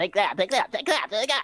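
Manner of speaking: very high, squeaky, tiny little voice. Picturing many small attackers punching kneecaps: little minion voices. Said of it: "little minion voices".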